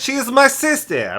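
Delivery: mock Kazakh accent. Joking about the teacher's accent: put-on Kazakh accent. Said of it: "kind of like Kazakhstanian".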